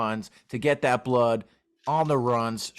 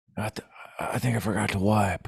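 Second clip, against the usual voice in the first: put-on just-woken-up old man voice, lower; 3 semitones lower than usual. Imitating Joe Biden getting up from the toilet: Joe Biden impression. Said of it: "'Cause that's how he talks".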